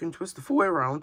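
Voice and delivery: voice cracking partway through. Showing how a new elbow joint twists, the speaker's voice cracks. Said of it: "We're going to ignore that voice crack".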